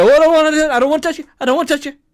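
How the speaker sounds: shrill, very high, loud voice. Speaker acts out a football play verbally: Chase Young impression. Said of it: "here's my impression of Chase Young".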